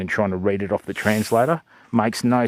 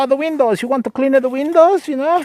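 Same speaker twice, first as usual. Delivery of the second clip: put-on old Italian man voice, very high, loud; 5 dB louder than usual. Retelling a call from people claiming to be from Windows, in an old Italian voice. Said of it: "I just put on an old Italian voice".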